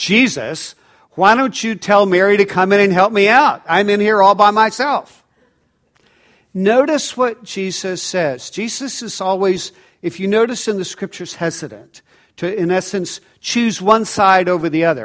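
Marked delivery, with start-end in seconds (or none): 0.0-5.2 loud, outraged, indignant, angry voice. Retelling Martha's complaint to Jesus, imitating Martha's angry tone. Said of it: "in a decidedly angry to-, tone".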